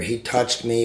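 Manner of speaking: ordinary talk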